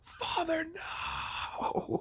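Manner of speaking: mock half-hearted, high-pitched mild yelling cry. Retelling a player fighting every goblin in a game, imitating his yelling. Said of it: "screaming profanities and yelling".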